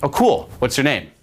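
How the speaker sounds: firm, commanding delivery. Showing how to ask someone's name: commanding tone. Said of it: "I'll do it in a commanding way".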